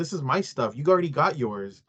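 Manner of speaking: usual speaking voice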